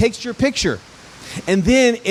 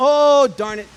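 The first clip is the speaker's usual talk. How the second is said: gentle, pleasant put-on Canadian accent; 4 semitones higher than usual. Retelling an elderly lady's reaction when her app fails, nice little Canadian voice. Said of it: "in this nice little Canadian voice".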